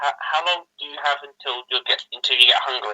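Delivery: quiet half-whisper in a put-on voice. Half-whispering in character to a companion about hunger: half-whispering in character. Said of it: "Whisper to Apis".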